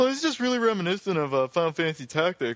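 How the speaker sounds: put-on casual young-sounding voice. Imitating a younger gamer friend, imitating Zach. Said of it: "our friend Zach over there would be like".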